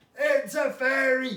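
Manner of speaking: loud, all-out, full-lung shout. Showing the audience what to shout if they see a fairy: shouting as loud as possible. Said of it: "shout as loud as you can".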